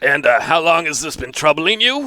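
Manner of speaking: put-on older, aged-sounding voice. Playing a doctor questioning a patient in a role-play: older voice. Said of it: "let's make an older voice".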